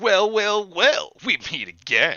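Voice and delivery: over-the-top, hammy, swooping, drawn-out theatrical voice. Reading a story aloud, voicing Randy greeting an old enemy: hammy voice. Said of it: "Randy said in a hammy voice".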